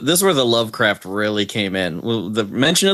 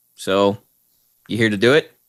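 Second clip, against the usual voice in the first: plain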